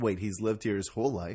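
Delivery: ordinary delivery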